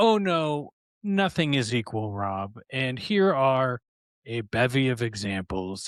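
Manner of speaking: very stern, slow delivery. Retelling a correction from the professor in a philosophy class: imitating a stern reply. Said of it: "that was met with a very stern".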